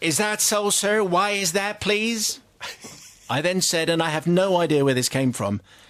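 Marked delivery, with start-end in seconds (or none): 0.0-2.4 put-on laid-on broad American accent, pitched up. Retelling what the nice lady asked him, broad American accent. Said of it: "In a broad American accent".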